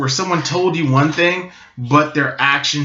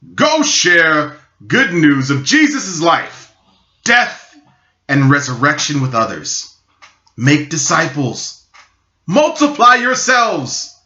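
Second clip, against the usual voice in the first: swooping sing-song put-on voice, wide pitch swings; 2 semitones higher, 3 dB louder than usual. Speaker gives a quoted instruction to listeners, in a pretend Jesus voice. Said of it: "in my pretend Jesus voice".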